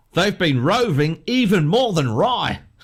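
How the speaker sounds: put-on Australian accent, pitched high. Reading out quiz clues to the others: put-on australian accent. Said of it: "I'm getting so much better at this".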